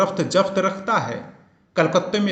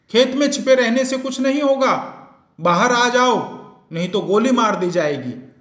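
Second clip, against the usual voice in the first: terror-laden, menacing, pitched high, called out; 6 semitones higher than usual. A man calls out to someone hiding in a field, loud terror-filled shout. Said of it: "आतंक भरी आवाज में".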